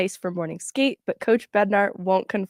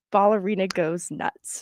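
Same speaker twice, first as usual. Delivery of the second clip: ordinary delivery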